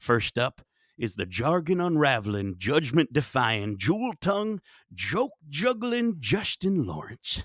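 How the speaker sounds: strange put-on accent, every S said as SH. Podcast host introducing the first guest on the show, unusual accent, S as SH. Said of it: "that accent is something".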